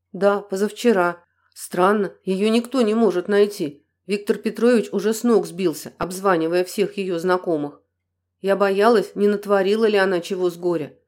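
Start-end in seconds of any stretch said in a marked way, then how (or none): none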